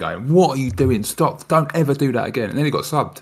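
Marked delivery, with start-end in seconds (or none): 0.3-2.5 furious, ranting telling-off. Retelling a player's outburst at a teammate: imitating Thiago Silva going mental. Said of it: "Thiago Silva was going mental at him".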